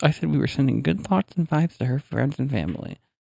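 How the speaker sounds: very quiet, near-inaudible hush. Recounting condolences sent to her friends and family, very quiet, barely audible. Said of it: "like you just did just then, so quiet that it's practically inaudible".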